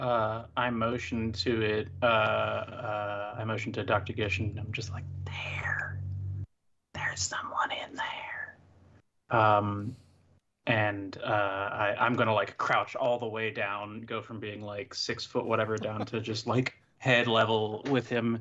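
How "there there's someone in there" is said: soft, breathy whisper under the breath. Crouched down, a character motions to Doctor Gish, whispering. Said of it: "Why why are we whispering".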